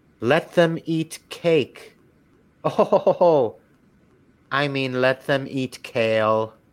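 put-on British accent. Retelling a story, the phone assistant answers her breakfast question, Siri with a British accent. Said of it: "in his British accent".

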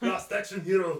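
high, loud, disgusted voice. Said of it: "You can hear the disgust in my voice".

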